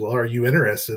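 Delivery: ordinary delivery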